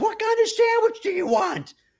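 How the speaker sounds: very high, top-of-lungs shout. Retelling a woman ordering across a sandwich shop: imitating someone yelling at top of lungs. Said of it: "at the top of her lungs".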